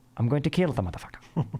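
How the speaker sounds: put-on British-accented speech. Talking to Aaron, imagining what Davy Crockett said in the dark: Davy Crockett in British accent. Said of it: "I imagine he said that in a British accent".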